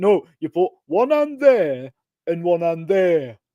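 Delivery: put-on Nottingham accent. Imitating a former boxing coach's catchphrase: imitating coach's strong Nottingham accent. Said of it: "really strong Nottingham accent".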